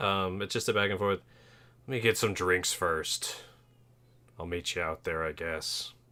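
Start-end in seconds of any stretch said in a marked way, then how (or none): 1.9-5.9 put-on old gruff warrior. In a tabletop game, playing a character talking to another player, old gruff warrior voice. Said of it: "voice comes out like an old, gruff warrior's voice".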